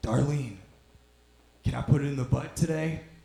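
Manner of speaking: put-on husky elderly grandpa old man voice. Imitating a grandpa heard through the wall asking darlene, in a husky voice. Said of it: "you just hear your grandpa's husky voice".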